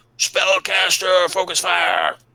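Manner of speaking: high-pitched goblin voice yelling. Game master voicing a pissed-off goblin shouting orders in Goblin: goblin shouting. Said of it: "He's still shouting out in Goblin".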